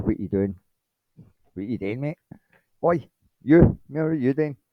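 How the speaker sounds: put-on, furious, angry, demanding rant. Retelling angrily contacting the freelancer: imitating own angry outburst. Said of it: "angrily contacted the freelancer and said".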